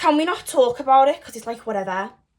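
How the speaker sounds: Liverpool Scouse accent.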